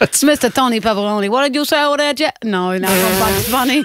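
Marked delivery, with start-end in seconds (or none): 0.0-1.3 put-on Brooklyn accent with speech impediment, higher pitch. Doing a character voice for the others: Tony Pepperoni voice, Brooklyn accent. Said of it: "her Brooklyn accent".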